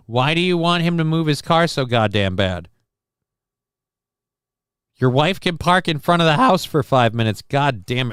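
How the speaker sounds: voice cracking and breaking. Ranting back at a question about someone blocking the road, voice cracking. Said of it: "my voice is cracking like thin ice".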